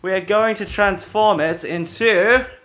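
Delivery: fake British accent, very high and very loud. Voicing the mayor addressing the people: put-on british accent. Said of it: "Why am I British?".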